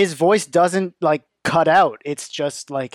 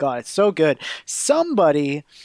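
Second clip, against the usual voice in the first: usual speaking voice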